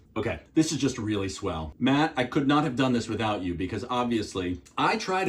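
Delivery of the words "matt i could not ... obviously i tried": usual speaking voice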